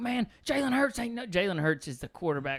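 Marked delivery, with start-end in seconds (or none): 0.0-1.2 put-on man's yell, higher pitch. Retelling how a short, jacked Auburn fan in a club yelled: imitating a man yelling. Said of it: "he's there yelling at this guy".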